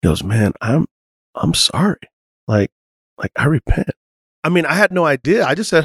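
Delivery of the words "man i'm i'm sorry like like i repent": put-on quiet speech. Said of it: "he just got really quiet".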